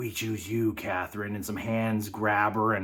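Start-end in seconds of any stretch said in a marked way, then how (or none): 0.0-1.3 imitated demon voice, put-on. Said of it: "you just hear a demon's voice say".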